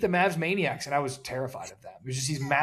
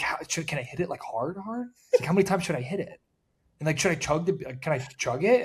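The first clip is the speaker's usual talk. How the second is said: put-on jittery, nervous, hesitant, second-guessing voice; 3 semitones higher than usual. Retelling a video of Josh Allen about to hit the drum: imitating Josh Allen nervous. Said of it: "he's so nervous to do this".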